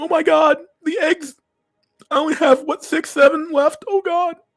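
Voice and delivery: mock distraught crying wail, very high and loud. Describing a meme, imitating a woman at her job: imitating a woman crying. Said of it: "She's just crying, saying".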